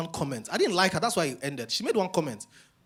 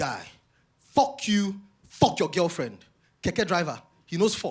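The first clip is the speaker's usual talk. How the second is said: mock-angry, put-on outburst of anger. Retelling what a guy said after the speaker defended his girlfriend, retelling an angry outburst. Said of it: "And the guy got angry with me".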